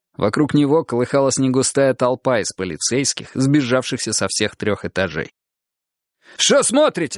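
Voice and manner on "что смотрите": very high-pitched, ringing shout. Nurzhan calls to the crowd of police officers around the sergeant, shouting. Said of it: "крикнул Нуржан".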